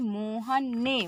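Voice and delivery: Mohan hit hard, strongly stressed. Explaining sentence stress in Hindi with an example, stress on Mohan. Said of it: "यहाँ पर हम इस शब्द पर क्या कर रहे हैं, बल दे रहे हैं".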